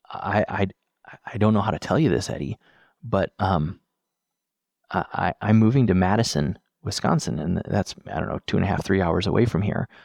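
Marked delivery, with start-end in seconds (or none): 0.1-7.4 put-on shaky, quivering voice. Retelling what a man said to him in his office, imitating a quivering voice. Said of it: "his voice is, you know, quivering".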